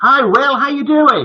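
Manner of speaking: very high-pitched, loud, needless shout. Greeting a caller who appears on a split screen, shouting. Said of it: "I don't know why I'm shouting".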